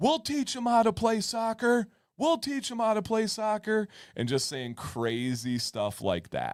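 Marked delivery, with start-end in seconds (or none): 0.0-3.9 very high, hollered yell. Retelling how a parent yelled across the sideline at the finals: imitating a dad yelling. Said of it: "starts yelling".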